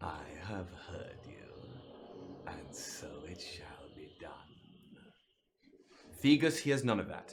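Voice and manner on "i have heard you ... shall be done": tiny rasping voice, very low, soft, hushed. Narrator voicing a familiar voice heard by a character, raspy little voice. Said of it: "a sort of raspy little voice".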